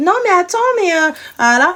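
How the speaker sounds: put-on small shrill voice. Imitating the girl on the line's little voice: imitating a small shrill voice. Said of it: "c'est avec sa voix en mode".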